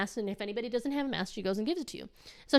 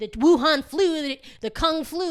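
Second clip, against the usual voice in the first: put-on, imitated woman's yell; 3 semitones higher than usual. Retelling how a shopper yelled at an old lady: imitating a woman yelling.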